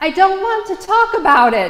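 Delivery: very high, loud, squeaky little voice. Recounting what he blurted out to an instructor, in a high, squeaky voice. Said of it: "In a high, squeaky voice, I said".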